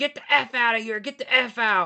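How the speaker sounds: acted, repeated high yelling. Retelling how a property owner kept yelling at them: imitating someone yelling. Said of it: "he just kept, like, yelling at me".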